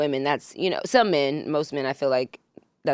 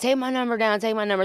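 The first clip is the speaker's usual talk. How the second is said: mock drunk slurred speech, higher; 7 semitones higher than usual. Retelling what a tipsy man at the car window said: imitating drunk slurring. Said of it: "slurring his words".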